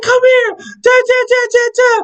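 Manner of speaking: acted-out very high, loud screaming. Retelling an overheard fight, imitating the girl screaming at the dude. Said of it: "I hear the girl screaming at the dude".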